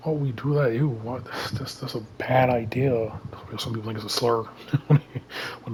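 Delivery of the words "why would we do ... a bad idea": disgusted, grossed-out complaining tone. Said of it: "they hear Roll Q and they get disgusted".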